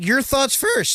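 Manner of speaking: voice cracking, jumping very high in pitch. Host on a live show asks the others for their thoughts: voice cracking. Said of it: "my voice cracked".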